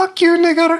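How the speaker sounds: put-on very high, sweet, innocent little-kid voice. Retelling what a young child said in a game: imitating a high innocent child voice. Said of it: "a high, innocent, you know, voice".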